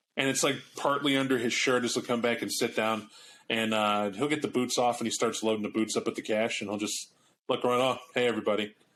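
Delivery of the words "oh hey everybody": mock deadpan, flat, as if normal. Telling a story, acting out a man loading cash into his boots: retelling a deadpan greeting. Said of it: "deadpan, like it's normal".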